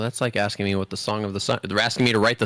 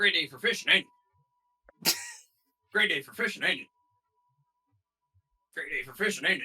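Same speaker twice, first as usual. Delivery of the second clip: soft, repetitive video game villager chatter; 7 semitones higher, 6 dB quieter than usual. Asked for their best NPC rendition on the podcast, the speaker performs: video game NPC voice. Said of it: "give me your best NPC rendition".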